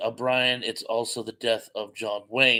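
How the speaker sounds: ordinary talk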